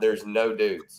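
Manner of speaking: put-on suspicious voice. Retelling how Banky reacts on noticing the bar: imitating Banky sounding suspicious. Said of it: "he says it in a way where there's".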